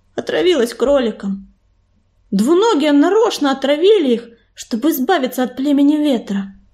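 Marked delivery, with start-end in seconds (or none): none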